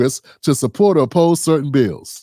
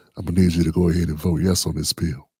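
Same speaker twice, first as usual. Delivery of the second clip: very quiet, hushed, up-close insistent voice; 11 semitones lower, 6 dB quieter than usual. Retelling how Lyndon B Johnson pressed people close up: quiet Lyndon B Johnson impression. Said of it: "he would say it real quiet".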